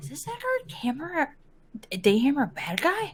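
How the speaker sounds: put-on whisper. Playing a character who asks another character a question: whispering in character. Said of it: "Ludra kinda whispers to Jayla".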